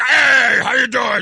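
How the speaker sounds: loud, rough, all-gravel voice. Imitating someone who greets the speaker warmly: John Larson gravelly voice. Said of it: "You know that gravelly voice he's got?".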